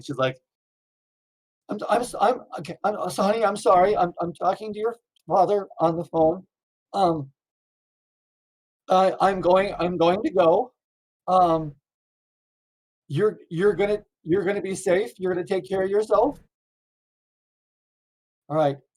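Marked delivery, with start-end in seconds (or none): 1.7-18.8 mock-tearful speech, higher-pitched. Retelling what a mother said to her child after opening the door, imitating a tearful mother. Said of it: "tears are running down her face".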